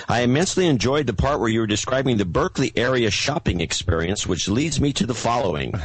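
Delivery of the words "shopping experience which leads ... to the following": normal talking voice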